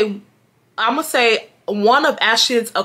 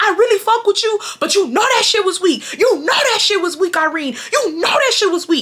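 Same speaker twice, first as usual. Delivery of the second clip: put-on heated rant, rapid and high-pitched; 8 semitones higher than usual. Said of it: "she's going off on me".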